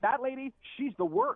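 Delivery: loud, slow, deliberate delivery. Recounting what she said after laughing at the speaker: really loud voice. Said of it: "she says in a really loud voice".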